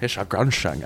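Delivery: s sounds pronounced as sh throughout. Doing a Connery line from The Rock: Sean Connery impression. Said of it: "That was my Connery in, in, in The Rock".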